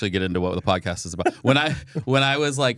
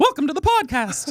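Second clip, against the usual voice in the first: very high, squeaky cartoon-style voice. On a podcast, showing the voices done for the kids: Mickey Mouse voice. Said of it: "Like I can do Mickey Mouse".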